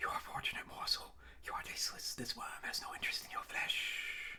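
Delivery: hushed whisper, many voices speaking in unison. Voicing a giant worm's voice creeping into the mind: voice like a choir of whispers. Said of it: "A voice creeps through your mind like a choir of whispers".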